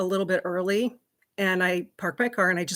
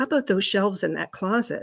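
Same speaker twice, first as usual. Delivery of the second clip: easygoing, mild, gentle-mannered man's voice. Recalling a man with a truck who took control, imitating his soft-spoken voice. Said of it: "in this very soft-spoken voice".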